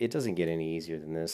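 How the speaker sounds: ordinary talk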